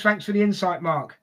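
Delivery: ordinary talk, nothing marked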